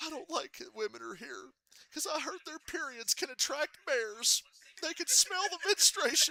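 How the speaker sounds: very high-pitched, loud sobbing and blubbering. Retelling a later Anchorman scene: imitating Anchorman character crying. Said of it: "he's, like, crying".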